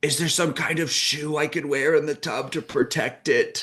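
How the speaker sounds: desperate, tearful yelling. Retelling someone afraid to get in the bathtub, imitating her yelling. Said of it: "she yells".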